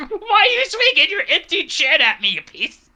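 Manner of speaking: high, mocking, teasing tone. Playing a drunken character dodging a swing, mocking a foe. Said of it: "I'm just literally fucking with him".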